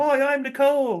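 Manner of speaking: put-on Australian accent, very high-pitched. Retelling how Nicole Kidman introduced herself, in Nicole Kidman's Australian accent. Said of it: "with an Australian accent".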